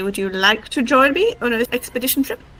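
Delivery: ordinary talk, nothing marked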